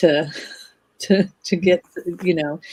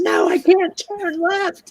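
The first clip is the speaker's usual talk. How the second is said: put-on shrill screaming screech, very high; 14 semitones higher than usual. Telling how their day started, reenacting screaming at the GPS. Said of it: "So I'm screaming at my GPS".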